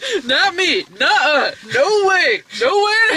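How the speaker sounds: mock, emphatic, forceful delivery.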